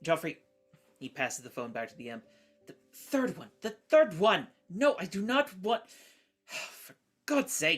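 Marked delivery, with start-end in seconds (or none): 2.7-7.8 high, screechy, frustrated exasperated shouting with little screeches. Voicing a character who passes the phone back to the imp: frustrated yelling with little screeches.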